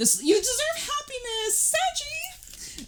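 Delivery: excited voice shooting very high, swooping. Tarot reader telling Sachi what the cards say, excited high voice. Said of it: "I love how my voice gets high sometimes".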